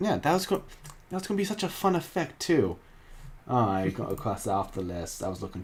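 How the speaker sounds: soft, deflated, disappointed, trailing off. Finding a planned fun effect no longer needed, the speaker sounds disappointed. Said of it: "you sound disappointed".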